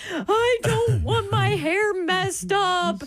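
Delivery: mock upset little girl wailing, very high. Retelling how a child reacted to a bad haircut: imitating a child wailing. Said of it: "she starts wailing".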